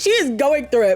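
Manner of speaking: plain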